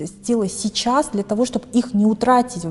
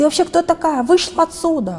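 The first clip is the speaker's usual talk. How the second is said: high, rude, bossy yelling; 8 semitones higher than usual. Recounting how someone at work answered her complaint: retelling a rude shout. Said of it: "Зачем вы кричите?".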